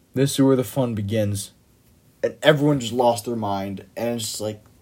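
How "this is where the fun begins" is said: normal talking voice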